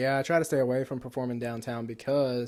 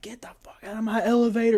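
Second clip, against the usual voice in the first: mock sudden shrieking outburst, very high and loud; 9 semitones higher, 6 dB louder than usual. Retelling meeting a man at an elevator, the speaker quotes him, retelling a man's scream. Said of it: "And he's like screaming".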